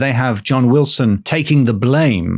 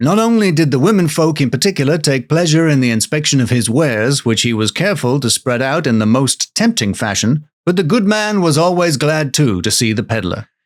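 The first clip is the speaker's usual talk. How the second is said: plain, generic American reading accent. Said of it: "so I'm gonna do an American accent for [name]".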